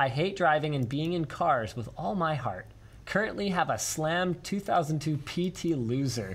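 normal talking voice

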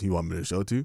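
low, flat, deadpan monotone with no inflection. Retelling what this guy once asked him out of nowhere, in a monotone voice. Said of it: "and monotone dude".

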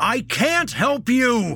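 very high, booming, bellowing shout. Narrator reads Jesse, sitting on the bed stomping, addressing the carpet: bellowing. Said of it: "he bellowed at the carpet".

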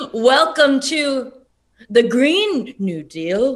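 oddly timed, off-kilter, stilted phrasing and cadence. Showing how a line would sound in the Ghostbusters guy's weird cadence. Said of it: "in the cadence of that guy from ghostbusters who has the weirdest cadence".

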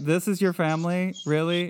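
normal talking voice

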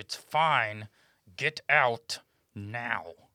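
sternly through gritted teeth. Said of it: "Shannon speaks to her sternly through gritted teeth".

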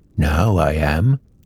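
words growled like a bear. Narrator reading the story, answering as Winnie the Pooh: growly Winnie the Pooh voice. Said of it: "said a growly voice".

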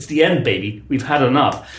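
ordinary talk

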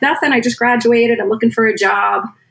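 normal talking voice

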